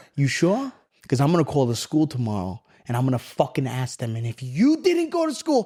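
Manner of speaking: furious, enraged, pitch swooping and climbing. Retelling how his mom confronted him about skipping school: imitating his furious mom. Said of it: "my mom lost it".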